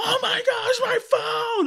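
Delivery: very high, worked-up, drawn-out screaming. Admitting it's not all roses, retelling own screaming when the phone fails. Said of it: "And I'm like screaming".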